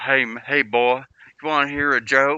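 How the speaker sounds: put-on heavy Southern American accent, laid on extremely thick. Imitating a man offering a fourteen-year-old a joke, in a thick southern accent. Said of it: "he had like an extremely thick Southern accent. I could try to imitate it".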